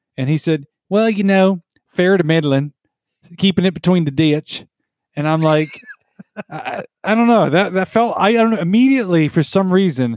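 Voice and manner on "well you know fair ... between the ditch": put-on effeminate Southern accent, much higher pitch. Retelling how a man answered a greeting, in an effeminate southern accent. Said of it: "fairly effeminate Southern accent kind of guy".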